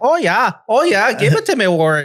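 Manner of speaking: put-on voice sounding Scottish. Retelling a moment up in Fargo, the speaker's quoted voice comes out sounding Scottish. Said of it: "that sounds Scottish".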